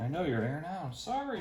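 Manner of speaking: soft, high, cooing pet-talk tone.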